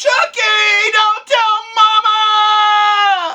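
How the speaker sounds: very high, very slow, very loud drawn-out holler. Retelling hitting a friend with a golf club: retelling his own yell. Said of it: "And I yell".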